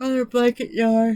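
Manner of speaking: words yawned out, very high-pitched and loud. Doing a late-night voiceover, yawning while talking. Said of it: "I'm not trying to yawn on y'all's ear".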